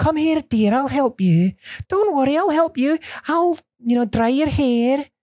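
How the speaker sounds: put-on Scottish accent from Edinburgh. Playing someone offering help and to dry another's hair, Edinburgh Scottish accent. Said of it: "That's like that's from Edinburgh".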